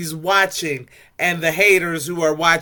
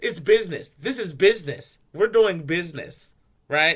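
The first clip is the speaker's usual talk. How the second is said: acted sly, knowing, smirking sarcasm; 4 dB quieter than usual. Retelling a scene where one person teases another in the car: imitating a smirking sarcastic tone. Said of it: "a little smirky, you know, sarcastic beering".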